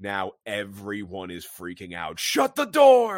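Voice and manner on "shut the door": put-on scream, higher and louder. Retelling a movie scene as everyone panics: imitating someone screaming. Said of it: "He's screaming".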